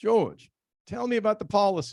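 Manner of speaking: clumsy fake South African accent. The speaker retells what Norman said to him, in Norman's bad South African accent. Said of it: "I'm not very good at South African accents".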